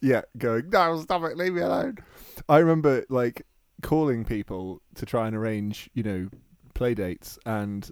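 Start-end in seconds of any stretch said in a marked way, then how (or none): 0.7-2.0 small goblin voice, begging and pleading. Voicing an imagined goblin whipped to make the internet work: whipped goblin pleading. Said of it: "a small goblin trapped somewhere in a room".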